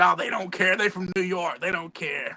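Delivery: put-on Southern drawl. Retelling Tennessee Lee's reply about what can be said on TV, Southern drawl as Tennessee Lee. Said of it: "Southern drawl".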